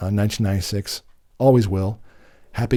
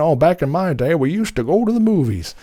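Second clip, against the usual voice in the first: high, put-on elderly old-timer voice; 7 semitones higher than usual. Poking fun at their own opinion, in an old man voice. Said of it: "that sounds like an old man".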